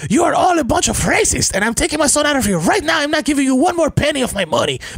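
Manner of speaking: very high-pitched put-on Spanish accent. Retelling a mother confronting the school: Ricky Ricardo accent. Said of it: "with her Ricky Ricardo accent".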